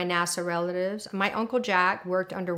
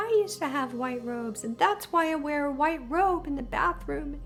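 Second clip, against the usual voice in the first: mock speaking through tears, tearful crying words; 8 semitones higher than usual. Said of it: "and I'm crying".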